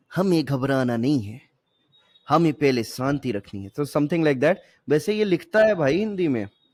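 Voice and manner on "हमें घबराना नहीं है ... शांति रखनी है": put-on Pakistani accent, lower pitch. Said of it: "तो उन्होंने बोला था ना".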